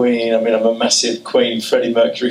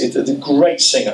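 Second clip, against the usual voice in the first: usual speaking voice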